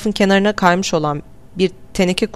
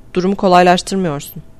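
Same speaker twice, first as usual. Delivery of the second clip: ordinary delivery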